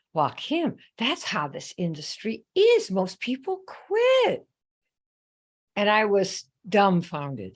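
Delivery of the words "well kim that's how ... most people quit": put-on slow, sing-song, drawling Southern woman's accent. Retelling what a lady said to the speaker, in her southern accent. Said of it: "she says in her southern accent".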